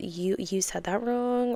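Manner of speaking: disapproving tone.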